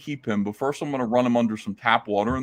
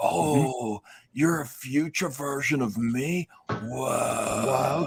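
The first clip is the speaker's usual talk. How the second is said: put-on surfer dude voice, quieter; 5 dB quieter than usual. Retelling a movie scene, imitating a surfer dude like Bill and Ted. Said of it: "He's like".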